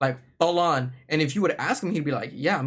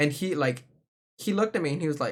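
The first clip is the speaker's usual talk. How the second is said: ordinary delivery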